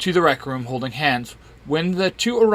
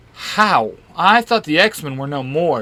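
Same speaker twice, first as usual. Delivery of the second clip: plain reading voice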